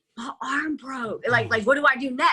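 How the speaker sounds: whispering. Retelling words said to the coach during a fight: retelling a whisper. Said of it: "I whispered to him".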